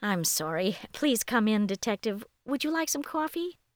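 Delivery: plain reading voice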